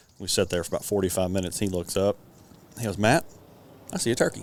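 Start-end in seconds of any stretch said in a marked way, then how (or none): 3.0-4.4 offhand, completely nonchalant, matter-of-fact tone. Retelling a hunting partner spotting a turkey: imitating a nonchalant remark. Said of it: "In the most nonchalant way".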